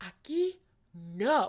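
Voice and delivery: put-on dead-serious, firm, no-joke little girl voice. Retelling how a little girl stopped her: imitating a dead serious order. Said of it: "dead ass motherfucking serious".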